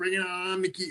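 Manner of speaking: high, soft voice. Recalling how he pulled you aside in the team meeting room, imitate Joe's high-pitched voice. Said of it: "And in Joe's high pitched voice".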